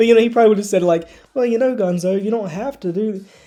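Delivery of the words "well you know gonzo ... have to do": put-on soft-spoken delivery, higher pitch. Showing how a past performer might have said the Kermit line: imitating a soft-spoken Kermit. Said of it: "a very soft-spoken approach".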